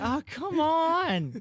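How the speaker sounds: very high pleading whine, "on" drawn out. Retelling muttering at a machine that would not work: imitating own pleading whine. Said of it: "almost, like, begging it to work".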